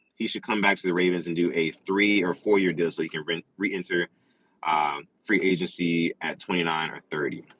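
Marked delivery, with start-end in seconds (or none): none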